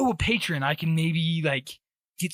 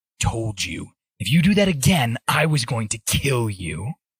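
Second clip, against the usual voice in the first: dead serious, deadly earnest, low voice; 6 semitones lower, 4 dB louder than usual. Voicing a character pointing a real sword at a trainee: dead serious. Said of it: "she looks, like, dead serious".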